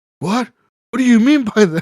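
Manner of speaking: mock freaked-out disbelief. Retelling how middle management reacted to the news: imitating someone freaking out. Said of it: "So they all start freaking out".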